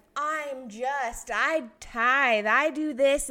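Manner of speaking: loud, very slow, mock puffed-up boastful bragging. Retelling the parable, imitating a braggy Pharisee. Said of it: "all braggy".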